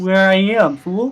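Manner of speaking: frog character voice. Introducing the character to another player: frog character voice. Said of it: "I love this frog".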